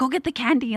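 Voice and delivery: high-pitched, pushy, urging call, put-on. Retelling a parade crowd scene, parents to kids: imitating parents yelling. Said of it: "they're yelling at their kids".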